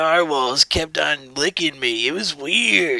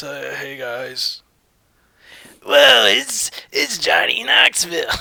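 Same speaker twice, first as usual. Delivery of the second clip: put-on grumbly, grumbling old-man voice. Asked what Johnny Knoxville sounds like, the speaker tries: grumbly Johnny Knoxville impression. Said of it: "not just an old man grumbly voice".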